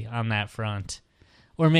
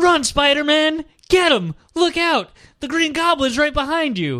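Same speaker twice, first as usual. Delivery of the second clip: put-on very high, loud, shrieking scream; 5 dB louder than usual. Imagining getting really drunk and screaming to Spider-Man, mock screaming. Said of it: "see how long they'll tolerate me screaming".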